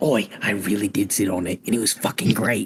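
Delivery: hushed, quiet whisper. Speaking privately to a companion while everyone is walking, whispering. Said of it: "I whispered to Relic".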